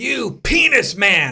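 jealous, enraged outburst, high, loud, full lungs. Retelling a childhood outburst in church, imitating a childhood yell. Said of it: "I yelled out at the top of my lungs".

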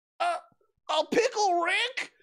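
very high, slow, puzzled and confused delivery. Voicing Morty answering Rick, looking confused: confused Morty voice. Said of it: "Morty says, looking confused".

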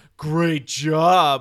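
very loud, odd, weird sarcastic tone. Showing an example of non-literal language: weird sarcastic tone. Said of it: "in a weird tone of voice".

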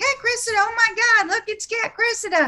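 very high, top-of-lungs Southern shriek. Retelling a woman in the queue shrieking out a name, in a shrieking Southern mom voice. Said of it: "like a Southern mom voice shriek out".

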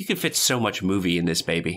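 normal talking voice

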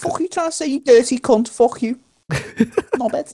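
very high, shrill, fake Scouse accent. Playing Connor, who only fakes being from Liverpool: fake Liverpool accent. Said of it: "Is your fucking Liverpoolian like drag queen accent you did?".

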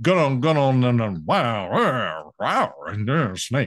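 rambling speech with words run together.

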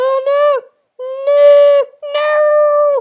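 very high, slow, long wail on each "no". Panicking about falling in while playing: sounding like Mrs. Doubtfire. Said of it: "I sound like, what's her name? Miss Doubtfire".

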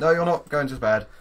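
high, loud, firm voice.

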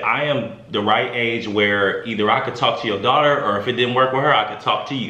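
plain

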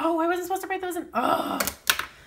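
loud, fast, high dismayed outburst.

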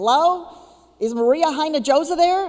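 put-on loud, high-pitched Southern accent. Speaker retelling a phone call at CNN, imitating A.J. Dinkins. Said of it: "this guy who's got this accent".

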